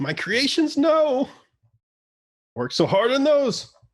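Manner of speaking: very high, loud, rising, pained shrieking screech. Game master voicing the Darrow after his creations are hit, screeching. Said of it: "the Darrow just screeches like you hit him, and he says".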